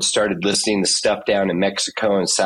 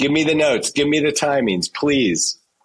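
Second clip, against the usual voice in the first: mock pleading, higher; 7 semitones higher than usual. Retelling asking the choreographer for the notes: imitating someone begging. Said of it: "I was begging for the notes".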